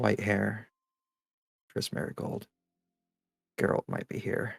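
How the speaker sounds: whispered speech. Playing a character in a game, leaning close to a companion, whispering. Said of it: "and she whispers".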